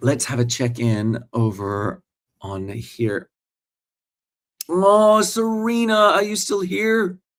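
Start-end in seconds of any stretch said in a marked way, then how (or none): 4.7-7.2 put-on high-pitched Australian accent. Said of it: "I was speaking with my Australian accent".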